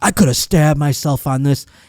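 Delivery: play-acted panicked, alarmed, freaked-out outburst. Retelling a police officer finding a paperclip while frisking: imitating a freaked-out cop. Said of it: "he freaked out".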